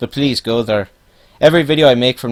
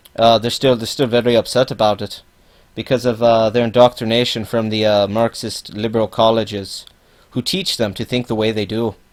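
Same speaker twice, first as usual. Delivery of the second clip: ordinary talk, nothing marked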